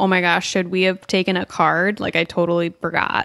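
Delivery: ordinary talk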